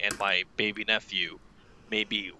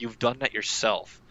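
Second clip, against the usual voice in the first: very flat, deadpan monotone delivery. Retelling what you said to someone crying over his hand: monotone voice. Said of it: "in a very like n- monotone voice".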